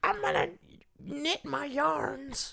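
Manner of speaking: put-on very high, crackly, creaky old grandmother voice. Told he sounds like a grandmother, trying the voice again: grandmother voice. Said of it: "that's a grandmother".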